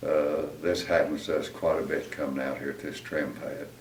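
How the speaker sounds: ordinary delivery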